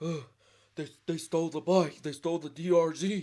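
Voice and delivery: mock frantic, panicked and out of breath. Retelling how Wardo woke him up about the stolen bike, imitating Wardo frantic. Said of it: "He's out of breath".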